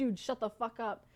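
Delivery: ordinary talk, nothing marked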